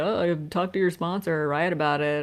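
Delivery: put-on sarcastic tone. Recalling what people said when the speaker felt triggered: mimicking sarcastic advice. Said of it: "people would very like sarcastically".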